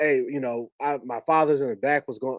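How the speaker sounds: ordinary talk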